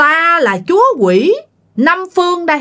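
strong, high-pitched, forceful, commanding delivery. Retelling the voice mom described as high and strong: high, forceful voice. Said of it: "nó cao và nghe nó mạnh mẽ vậy lắm. Nói vậy nè".

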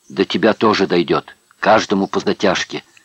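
plain

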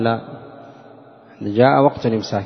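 ordinary delivery

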